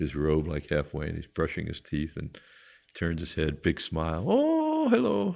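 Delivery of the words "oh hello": very high, giggly voice, talking through giggles. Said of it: "Everything is sort of a giggle with him".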